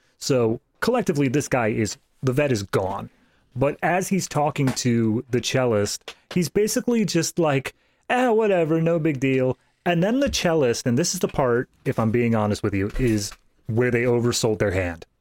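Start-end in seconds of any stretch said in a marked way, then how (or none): 8.1-9.6 put-on drunk voice, much higher. Retelling a scene where the vet talks to the cellist, imitating a drunk man. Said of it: "he's getting wasted".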